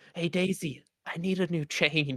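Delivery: loud stage whisper. Asking Daisy for a new chain in character: stage whisper. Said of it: "stage whisper to Daisy".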